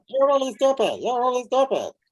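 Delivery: really funny voice. Telling listeners to picture a mean person as a clown, in a really funny voice. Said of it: "make them talk with a really funny voice".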